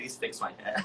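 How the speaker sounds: mock tearful pleading voice. Retelling going back to the barber after a rushed haircut: imitating own crying plea. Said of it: "I go crying back to John, like".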